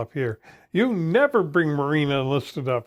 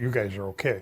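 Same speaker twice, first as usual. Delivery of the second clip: very low, soft, hushed half-whisper; 7 semitones lower, 6 dB quieter than usual. Recounting what a man said as the two Marines passed him, retelling a half-whisper. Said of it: "he kind of whispered".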